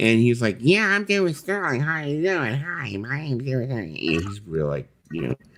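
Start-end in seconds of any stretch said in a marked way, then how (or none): 0.6-4.0 very high, funky little-guy voice. Retelling meeting David Sterling, the speaker imitates David Sterling's funky voice. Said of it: "He's got this really funky voice when he talks like this".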